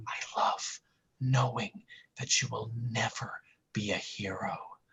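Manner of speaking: soft mock seductive whisper.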